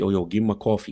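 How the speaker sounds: put-on heavy, thick New York accent. Retelling what a coworker said when they first met, in a thick New York accent. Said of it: "he had a real thick New York accent".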